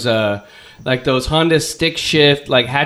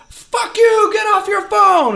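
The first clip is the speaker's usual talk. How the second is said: put-on scream, higher. Retelling how a motorcyclist yelled at a stop sign: imitating a motorcyclist screaming. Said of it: "starts screaming at me".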